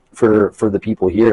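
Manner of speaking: normal talking voice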